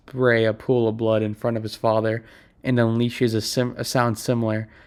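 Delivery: ordinary delivery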